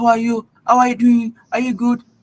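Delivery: high, loud shouting.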